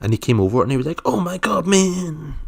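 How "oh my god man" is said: put-on American accent, very high-pitched and drawn out. Retelling what a man from Denmark said when he came over, in an American accent. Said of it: "Don't know why I'm doing like a American accent".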